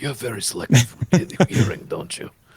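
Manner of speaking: high, hushed, stumbling whisper. Repeating a teasing question to another player, now whispering. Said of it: "I'm supposed to be whispering right now".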